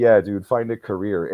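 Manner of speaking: ordinary talk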